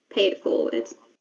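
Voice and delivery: soft, hushed whisper under the breath. Voicing a character who leaves a gold coin on a stool: whispering under her breath. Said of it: "she's just gonna whisper under her breath".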